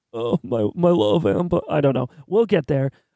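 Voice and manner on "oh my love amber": acted tearful sobbing, low and drawn out. Practicing a Boston Rob impression, the speaker imagines him crying; Boston Rob mock crying. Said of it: "Maybe if he's crying".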